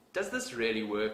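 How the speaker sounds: normal talking voice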